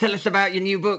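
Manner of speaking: very fast, rushed, rattled-off delivery.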